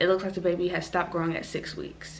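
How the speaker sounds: ordinary talk, nothing marked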